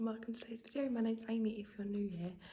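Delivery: speaking in a whisper. Opening a video early in the morning: whispering. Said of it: "I'm whispering".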